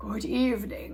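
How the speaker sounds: breathy, low monster voice. Reading a story, the narrator voices the substitute monster under the bed: low, breathy voice. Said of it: "said a low, breathy voice".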